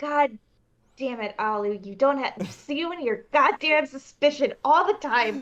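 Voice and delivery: muttering under breath. Player voicing a character who grumbles at another character, muttering under her breath. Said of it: "mutter under her breath".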